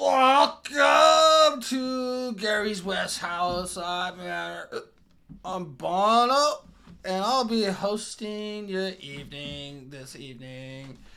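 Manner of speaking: booming, put-on drunken bellowing voice. Describing the voice the band hears backstage, booming mock-drunk voice. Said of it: "a booming voice, kind of drunkenly".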